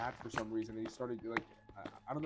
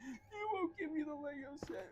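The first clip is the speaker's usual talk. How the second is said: very high, drawn-out, slow fake sobbing wail; 4 dB quieter than usual. Retelling how a classmate who wanted a toy begged, imitating fake crying. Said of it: "he started fake crying".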